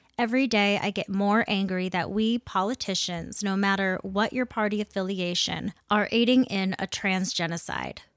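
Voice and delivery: ordinary delivery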